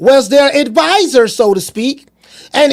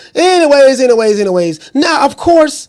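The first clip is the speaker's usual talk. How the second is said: normal talking voice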